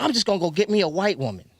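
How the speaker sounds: play-acted worked-up, irate, heated outburst. Retelling what they said at the shop, retelling a loud irate remark. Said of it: "And I'm talking loud".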